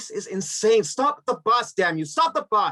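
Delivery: all-out, high-pitched yelling. A passenger on a bus with no driver demands it stop; shouting. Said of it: "you're shouting in an empty seat".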